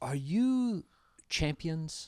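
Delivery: put-on speaking in Hawaiian accent. Retelling what a fighter said after tapping him: imitating Max Holloway's Hawaiian accent. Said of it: "he's got that Hawaiian accent".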